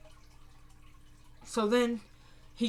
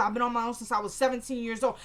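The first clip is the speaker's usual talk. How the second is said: plain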